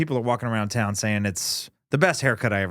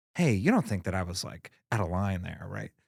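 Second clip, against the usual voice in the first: put-on unsure, insecure, reassurance-seeking tone; 3 semitones lower, 6 dB quieter than usual. Imitating his own insecure question to a trusted friend, as the impression shows. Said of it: "that's the impression that he does".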